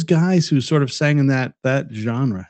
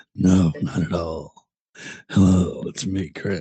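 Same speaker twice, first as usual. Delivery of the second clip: put-on, very low, slow sexy voice; 7 semitones lower, 3 dB quieter than usual. Teasing another speaker by imitating his sexy voice: imitating Chris's sexy voice. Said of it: "Chris is putting his sexy voice on".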